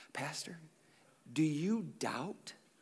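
very slow, hushed, secretive whisper. Imitating someone asking a pastor about doubt: imitating a whisper. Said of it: "a whisper voice".

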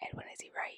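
very quiet, hushed whisper. Turning aside to ask another person present a question, whispering. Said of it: "that's weird that you're whispering to Edwin".

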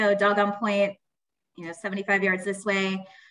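ordinary delivery

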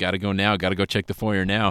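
normal talking voice

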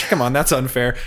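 plain

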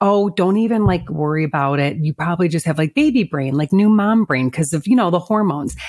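normal talking voice

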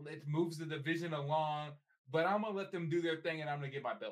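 cocky, self-assured, boastful put-on fighter voice. Retelling a fighter's interview after her loss: imitating cocky Valentina Shevchenko. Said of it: "stop being cocky".

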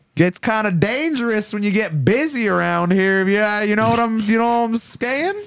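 put-on Southern drawl. Acting out a guy who talks with hay in his mouth: imitating a southern drawl. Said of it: "talks all like southern drawl".

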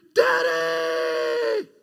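put-on child voice, swooping, shouted screaming cry. Retelling how a child hanging from a tree cried out: imitating a child screaming. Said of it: "And he's screaming".

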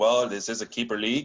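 put-on Canadian French accent. Imagining what someone was thinking to himself, put-on French-Canadian accent. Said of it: "I'm using my Canadian, French-Canadian accent".

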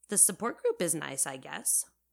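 ordinary delivery

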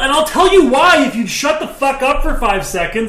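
high, loud exasperated yell.

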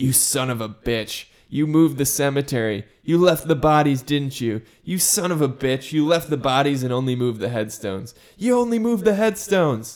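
loud, high, furious accusing shout. Retelling the scene where Steve learns the truth: Steve yelling in anger. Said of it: "Steve yells at him in anger".

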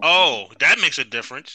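thick, heavy, dripping sarcastic tone. Reacting to hearing that a jersey cost a hundred dollars: heavy sarcasm. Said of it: "that sarcasm was like Niagara Falls".

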